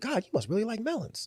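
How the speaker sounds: quiet muttered voice. Retelling what a man said to a woman carrying melons, imitating a mutter under his breath. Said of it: "he said it under his breath".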